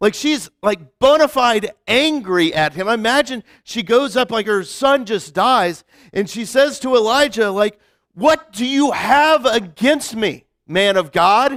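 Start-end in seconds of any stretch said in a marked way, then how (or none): 8.1-11.6 mildly sarcastic, mocking, accusing tone. Retelling a mother's words to Elijah after her son dies, mock-sarcastic. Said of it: "man of God was said a little sarcastically".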